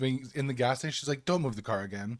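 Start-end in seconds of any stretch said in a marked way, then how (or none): 1.2-2.2 cool, calm, indifferent and unbothered tone. Retelling a reaction at a gas station: imitating an unbothered reply. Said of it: "So unbothered".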